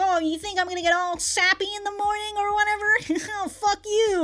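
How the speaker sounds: high, cheeky, teasing little gremlin voice.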